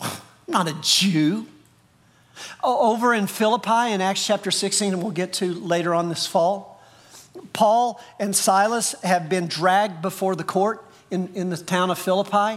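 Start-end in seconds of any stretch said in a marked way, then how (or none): 0.0-1.5 play-acted thick, dripping, heavy sarcastic delivery. Speaker repeats Pilate's reply for listeners, retelling a sarcastic line. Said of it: "It's just dripping with sarcasm".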